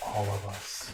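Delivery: very quiet, very low, soft, hushed half-whisper. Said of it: "I whisper in your".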